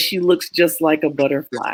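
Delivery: ordinary delivery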